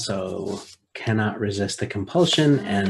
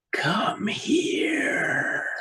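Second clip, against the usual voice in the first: harsh, whispering voice; 11 semitones higher than usual. The narrator voices the unseen voice that Gayla hears calling her; harsh whisper. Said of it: "you hear a harsh whispering voice".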